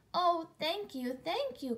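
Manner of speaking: high cry, theatrical as in a storybook. Narrator reads a character thanking the friendly dog, cried out. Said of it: "cried Emily".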